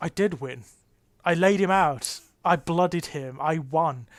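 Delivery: ordinary talk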